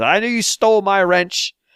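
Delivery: put-on over-the-top Scottish accent. Recounting a scene where a repairman emerges from the ice and speaks, cartoonish Scottish accent. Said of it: "in a very cartoonish Scottish accent".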